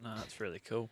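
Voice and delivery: very soft, quiet, flat, toneless monotone. Chatting about smoothies with the other speaker, replying in a monotone. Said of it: "you're talking in the most monotone voice".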